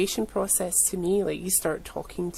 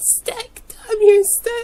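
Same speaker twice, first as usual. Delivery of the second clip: drawn-out screaming, very high, very loud, shrill; 12 dB louder than usual. Retelling screaming at a box whose parts won't stick: imitating own screaming. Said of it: "I started screaming at the box".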